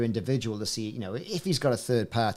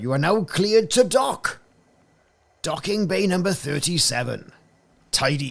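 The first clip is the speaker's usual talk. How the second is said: loud, high, raised put-on Welsh accent; 6 semitones higher, 5 dB louder than usual. Trying out a voice for docking announcements, the speaker uses a Windsor Davies Welsh accent. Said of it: "In my Welsh accent voice like that".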